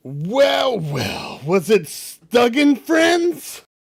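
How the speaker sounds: very high, reverberating, echoing voice, well stretched out. The narrator voices a voice that fills the chamber: reverberating, echoing voice. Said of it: "reverberating, echoing voice".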